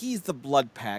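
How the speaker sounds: ordinary talk, nothing marked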